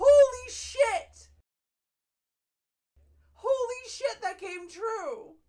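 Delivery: excited yelling. Reacting as something the speaker had forgotten comes true: excited yelling. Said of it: "I'm sorry for yelling".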